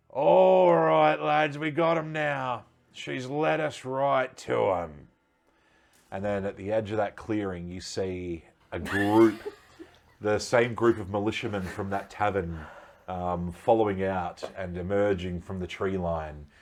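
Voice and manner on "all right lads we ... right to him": very high, loud, drawn-out, garrulous blustering shout. Storyteller voicing someone calling to the lads from behind the trees, loud garrulous yelling. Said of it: "a loud, garrulous voice yelling out".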